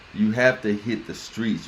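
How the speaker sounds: usual speaking voice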